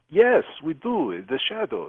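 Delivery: put-on clumsy Czech accent, sounding Russian. Retelling what a woman in a bar said, attempted Czech accent. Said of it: "I can't do a Czech accent, but I'll try".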